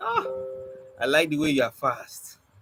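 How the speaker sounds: ordinary delivery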